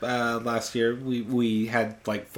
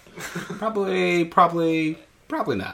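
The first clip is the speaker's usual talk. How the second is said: very slow, drawn-out, high-pitched waffling and hedging; 7 semitones higher than usual. Echoing another speaker's line as a Larry David impression. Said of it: "That was your Larry David moment".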